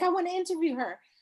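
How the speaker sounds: eager, excited, high-pitched exclamation.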